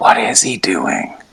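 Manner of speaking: slow, hushed, leaning-in whisper. Leaning in to speak while being carried off: whisper. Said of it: "lean in and whisper".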